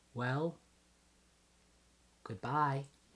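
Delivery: play-acted, syrupy, sugary, very sweet voice. Acting out how she will say goodbye, in her sweetest possible voice. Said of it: "She will say in the sweetest possible voice she can".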